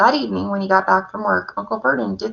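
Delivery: ordinary delivery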